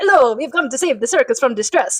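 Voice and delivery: put-on Italian accent. Retelling a comedy bit, the speaker quotes a performer's opening line in italian accent. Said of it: "Mickey starts with his Italian accent".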